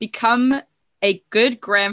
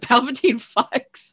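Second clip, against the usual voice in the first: mild, small, half-yelled voice; 3 semitones higher than usual. Retelling the first thing yelled walking out: imitating own past yell. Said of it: "the first thing I yelled was".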